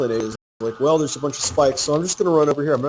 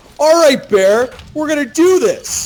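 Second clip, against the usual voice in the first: play-acted very high, loud, pissed-off angry delivery; 12 semitones higher, 6 dB louder than usual. Retelling a game where Alan was killed by a bear: imitating Alan being angry. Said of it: "Alan is immediately pissed".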